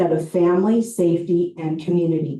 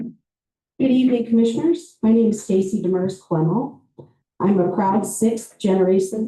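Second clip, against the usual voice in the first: jittery, self-conscious, nervous voice; 3 semitones higher than usual. Introducing themself to the commissioners at a public meeting, nervous. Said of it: "I get nervous when I speak to other people".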